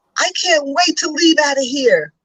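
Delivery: acted very angry tone. Recounting what a thirteen-year-old said when refused a sleepover, retelling a very angry outburst. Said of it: "he said in a very angry tone".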